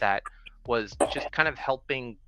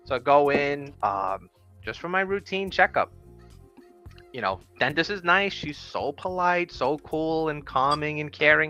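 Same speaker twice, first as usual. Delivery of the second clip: normal talking voice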